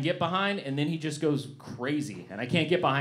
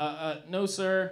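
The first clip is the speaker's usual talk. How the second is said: mock stammer, higher pitch, slower; 4 semitones higher than usual. Retelling answering a man on a bus who asked about Spanish: retelling own stammered reply. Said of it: "And I go".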